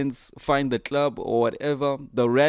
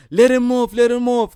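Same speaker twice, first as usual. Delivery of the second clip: shrill, very high, loud, panicked pleading; 10 semitones higher, 7 dB louder than usual. Retelling a bus story, quoting passengers begging the driver: imitating pleading passengers. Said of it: "pleading with the driver".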